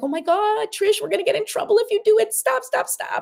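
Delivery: frantic, scared, very high panicked pleading voice. Acting out the scared little part of yourself: acting out a scared, freaking-out inner voice. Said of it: "that scared little part of you that's just freaking out".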